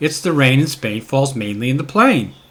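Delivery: really loud delivery at full volume. Testing recording levels with a sample sentence: saying it really loudly. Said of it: "if I really wanted to say it loudly".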